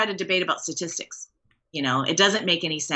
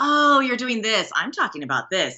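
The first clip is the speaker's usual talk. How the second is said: mock smug, smart-aleck tone. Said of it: "that smart ass from high school that was like".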